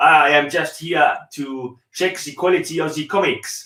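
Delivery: heavily laid-on, put-on French accent. Demonstrating a line for the listener to try, in a French accent. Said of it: "I do a French accent".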